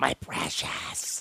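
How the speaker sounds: breathy, slobbering whisper, all breath. Imagining how a fan will sound on seeing the lunchbox: Gollum voice. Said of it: "he'll sound like Gollum".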